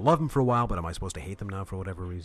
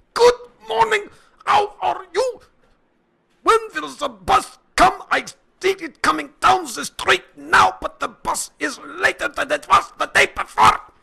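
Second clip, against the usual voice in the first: very loud, very high, rough dictator-style ranting shout; 12 dB louder than usual. Imagining everyone greeting each other in the same voice; mock shouting and ranting. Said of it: "everyone would walk around shouting and ranting in the same voice".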